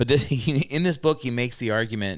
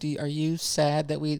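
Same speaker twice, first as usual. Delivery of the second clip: put-on shaky, trembling voice, higher and quieter; 4 semitones higher, 4 dB quieter than usual. Retelling a mother's hesitant question on the phone: imitating a trembling voice. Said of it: "with a trembling voice".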